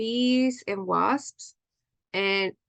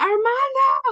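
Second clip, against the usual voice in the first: desperate, frantic, shrill shout, very high; 6 dB louder than usual. Telling about a wasp in the room, calling a best friend, retelling a frantic yell. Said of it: "and I'm like yelling frantically".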